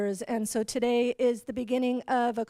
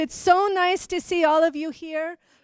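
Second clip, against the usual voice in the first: projecting, raised classroom teacher voice, pitched up; 5 semitones higher, 6 dB louder than usual. Assistant superintendent greeting a room full of parents: teacher voice. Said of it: "I got to use my teacher voice".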